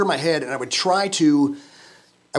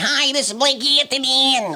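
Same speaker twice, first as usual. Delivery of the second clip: very high, slow, awkward beginner announcer voice; 10 semitones higher than usual. Recalling how they sounded on early broadcasting-school tapes, in a really high-pitched voice. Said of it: "really high".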